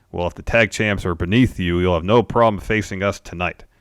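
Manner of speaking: normal talking voice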